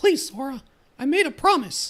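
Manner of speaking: falsetto cartoon voice. Voicing the king's reply to Sora, in a falsetto Mickey voice. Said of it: "the problem with me trying to do Mickey's voice".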